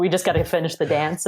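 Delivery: plain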